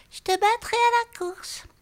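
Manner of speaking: small, piping, squeaky snail voice, very high pitch. In a read-aloud fable, Pelon the snail answers Kanchil in a small voice. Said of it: "répéta la petite voix".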